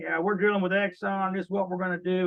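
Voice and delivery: put-on friendly, nice country-accent twang. Imitating callers who phone your contact, with a nice country twang. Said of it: "they'll come on with this nice country twang".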